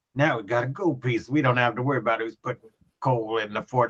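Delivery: quiet, mumbled character voice. Narrating a player's character shambling down the street, Kragan mumbling to himself. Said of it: "goes shambling and mumbling himself".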